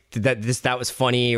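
ordinary delivery

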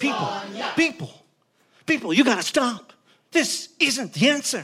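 commanding voice. Jumping between Sonia and an angry crowd to stop them, use an authoritative Captain Kirk voice. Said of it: "I used the most authoritative voice that I could come up with".

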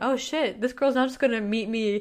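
normal talking voice

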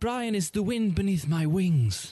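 proper British accent. Asked what accent to use for the line, in a young Obi-Wan Kenobi accent. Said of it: "kind of like an Obi-Wan Kenobi, a young Kenobi there".

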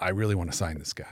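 ordinary delivery

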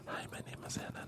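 hushed, soft, slow, drawn out ASMR whisper. Showing what an ASMR introduction sounds like, ASMR voice. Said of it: "It's very ASMR".

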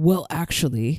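harsh, brutal metal-style voice. Speaker talking about metal music, says this in a brutal voice. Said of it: "in a brutal voice".

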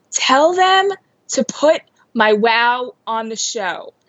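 put-on pushy, insistent child yelling. Retelling what a kid yelled from the backseat: imitating a child yelling. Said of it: "she's yelling from the backseat".

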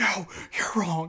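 mock whispered scream. Retelling arguing over a game of Uno: imitating a whispered scream. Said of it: "screaming, whispering at each other".

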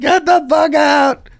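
play-acted, very high, shrill, drawn-out wailing sob-yell. Retelling yelling at the housekeeper who walked in, retelling a scream-cry. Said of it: "like scream crying".

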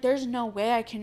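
ordinary delivery

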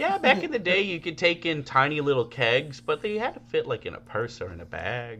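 put-on sweet elderly lady. Retelling what someone said about kegs: sweet old lady voice. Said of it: "Only old lady voice I can do".

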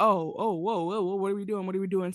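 sobbing mockery, mocking crying sound. Retelling a scene where one character mimics the others: imitating a mocking mimic. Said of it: "Starts mimicking them".

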